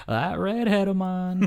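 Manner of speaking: put-on old Southern preacher-style drawl. Quoting a funny man who passed away, in Southern Baptist preacher voice. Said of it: "kind of like that Southern Baptist preacher voice".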